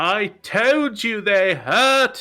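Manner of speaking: very high, loud, distant yell. High up on the ship, Valros peeks over the edge and yells down. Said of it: "Valros peeking over the edge would just yell out".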